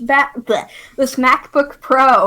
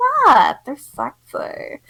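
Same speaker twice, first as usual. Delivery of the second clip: put-on flamboyant camp voice with swooping pitch; 3 semitones higher than usual.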